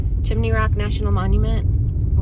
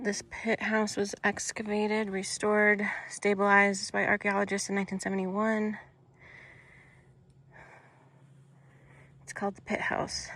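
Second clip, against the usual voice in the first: winded, breathing heavily while talking; 13 dB quieter than usual. Touring a monument structure at high elevation, breathing heavily. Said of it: "I'm breathing heavy".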